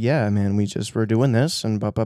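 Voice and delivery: calm, pleasant, easygoing, quiet, soft voice. Imitating a podcast guest's speech: Scott's quiet soft voice. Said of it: "his voice was so quiet and soft".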